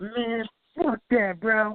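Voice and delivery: very high-pitched put-on voice, slow and drawn-out drawl. Retelling what a friend always says, imitating Danny's voice. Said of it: "Danny voice".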